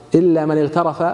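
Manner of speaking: plain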